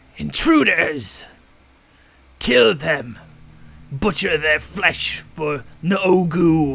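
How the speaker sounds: loud, slow gnoll war cry, word stretched. Voicing a gnoll leader who spots intruders and orders the kill: gnoll leader's war cry. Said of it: "and he turns, and he goes".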